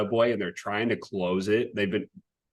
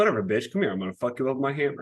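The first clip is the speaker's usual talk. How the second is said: threatening, trash-talking tone; 4 semitones higher than usual. Imagining the character Vulcan shit talking: Vulcan trash-talking. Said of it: "next character to do it".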